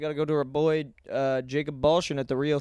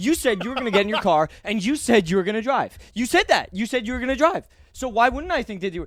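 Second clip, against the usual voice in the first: put-on argumentative voice, higher and louder; 7 semitones higher, 4 dB louder than usual. Retelling a cop arguing with a man: imitating a cop arguing like a girlfriend. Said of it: "female cop kind of argue like a girl".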